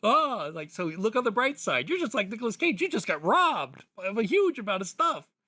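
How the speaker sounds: acted, really excited, high, swooping cheerful voice. Telling a sad story about a robbery, imitating a stranger who got really excited. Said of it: "really excited".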